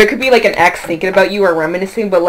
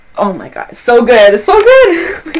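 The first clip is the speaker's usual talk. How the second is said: bubbling over with excitement, high and swooping; 5 semitones higher, 4 dB louder than usual. Speaker reacting to the group's ideas, excited. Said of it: "I'm getting excited for y'all".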